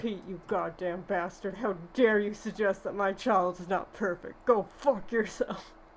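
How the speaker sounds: fake cartoonish anger. Imagining Goofy finally swearing at Pete to defend his son, mock-angry Goofy voice. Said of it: "you can just break into that voice".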